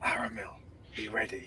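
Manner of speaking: breathy, stealthy, very quiet whisper. Leaning back in character to warn Aramel quietly: whispering. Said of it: "lean back and whisper".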